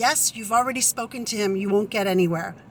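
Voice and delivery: ordinary talk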